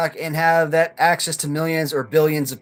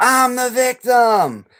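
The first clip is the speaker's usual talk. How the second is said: mock top-of-the-lungs, high-pitched outraged scream; 7 semitones higher, 3 dB louder than usual. Describing a woman who went on TikTok, the speaker acts her out: mock screaming at top of lungs. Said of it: "started screaming at the top of her lungs".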